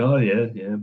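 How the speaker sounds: mock deadpan, flat, uninterested, expressionless monotone. Retelling own younger reactions while others got excited: imitating own past flat affect. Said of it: "I would normally have had quite a flat affect".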